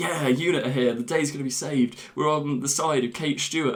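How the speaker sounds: plain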